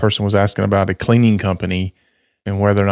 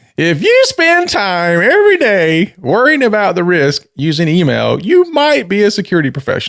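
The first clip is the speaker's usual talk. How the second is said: very high, animated comedy voice with swinging pitch; 10 semitones higher, 4 dB louder than usual. Reading a joke from the notes in a Jeff Foxworthy voice. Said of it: "in my best Jeff Foxworthy voice".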